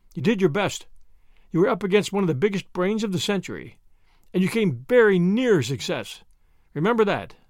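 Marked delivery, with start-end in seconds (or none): none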